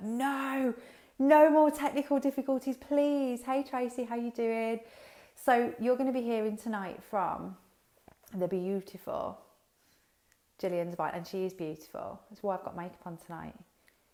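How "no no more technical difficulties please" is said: frantic, very loud, high-pitched panicked voice. Pleading as people say they cannot hear: panicked plea. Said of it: "So I'm panicking now".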